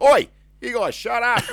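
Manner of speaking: very high, loud, blunt, rude shouting tone. Teasing the co-host about how he talks while recording: imitating a rude shout. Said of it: "you don't even try and sound like a nice, nice person".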